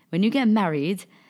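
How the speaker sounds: put-on old woman's accent, D in married hit hard. Talking to her grandmother, quoting her advice while imitating grandmother's accent. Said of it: "and you say it in your accent".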